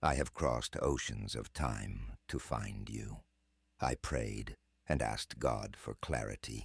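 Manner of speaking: very deep middle-aged American male voice. Playing samples from a voice tool: a very deep middle-aged American male voice. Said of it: "middle-aged American male with a very deep voice".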